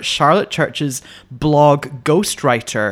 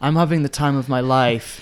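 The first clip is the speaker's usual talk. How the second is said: imitated, put-on deadpan delivery. Quoting how someone says a cheerful line: imitating a deadpan delivery.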